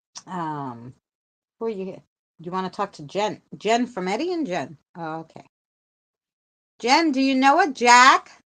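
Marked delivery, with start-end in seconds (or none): 6.8-8.2 calling loudly, higher and louder. Asking a caller if she knows someone: yelling to someone far away. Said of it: "Why am I yelling at you".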